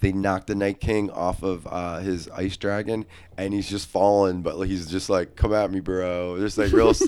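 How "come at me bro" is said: put-on relaxed villain voice. Retelling a TV scene where the villain falls: imitating a super relaxed Night King. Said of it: "he's just, like, super relaxed, like, falling".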